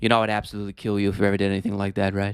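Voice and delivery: soft-spoken, slightly creepy put-on voice. Acting out someone's reply to John in a soft-spoken, kind of creepy impression. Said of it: "he's always very soft spoken and kind of creepy".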